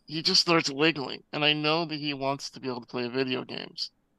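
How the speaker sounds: ordinary talk, nothing marked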